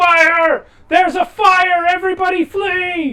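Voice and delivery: very loud, very high, shrill, frantic panicked yell. Voicing a man bursting in with smoke and flames behind him: panicked yelling. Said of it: "he yells".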